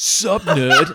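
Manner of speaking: very loud, high, brash, taunting bully voice. Recalling a schoolmate who jammed a compass into a leg, imitating Daryl Peters. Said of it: "he's like".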